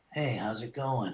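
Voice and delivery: relaxed, laid-back, low and quiet. Speaker in character greeting people who come up to the booth, laid-back Shikamaru voice. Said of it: "very laid back".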